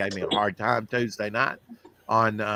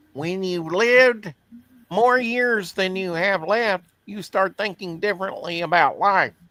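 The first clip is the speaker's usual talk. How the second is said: loud cartoon rabbit voice, pitch going up; 8 semitones higher, 5 dB louder than usual. Delivering a saying about life: bad Bugs Bunny voice. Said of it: "it was a bad Bugs Bunny".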